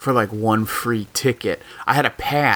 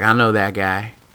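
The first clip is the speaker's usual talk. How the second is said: put-on homemade Southern New Orleans accent. Quoting a woman at a bar who knew the player, put-on New Orleans accent. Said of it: "that's my New Orleans accent".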